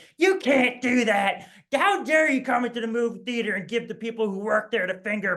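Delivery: woman's high-pitched screaming, ranting voice. Recalling a random woman at the movie theater yelling at them, imitating a woman screaming. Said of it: "this random woman started screaming at me".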